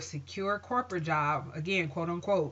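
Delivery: normal talking voice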